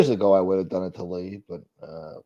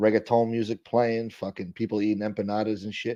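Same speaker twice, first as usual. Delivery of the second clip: ordinary talk, nothing marked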